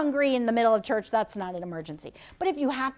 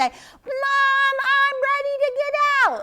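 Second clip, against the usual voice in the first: very high, long, drawn-out yell; 14 semitones higher, 5 dB louder than usual. Showing children how to call from the bathtub at home: yelling. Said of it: "You can yell that way".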